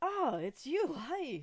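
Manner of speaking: shrill, booming, drawn-out shopkeeper voice. Voicing a shopkeeper greeting a player who walks in: shopkeeper voice. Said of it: "he looks over like".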